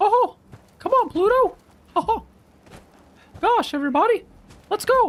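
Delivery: voice pushed to the very top of its range. Showing the highest voice they can do, a high Mickey voice. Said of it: "That kind of a voice, like a high pitch like that".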